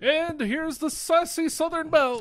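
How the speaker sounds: very high wrestling ring announcer voice, big call. Objecting to how she gets introduced, imitating an announcer. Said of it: "I don't want the announcer guy going".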